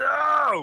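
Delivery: freaking out, high and loud. Narrating the scene, voicing the barkeep freaking out after someone barfs from the rafter. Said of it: "The barkeep's now freaking out".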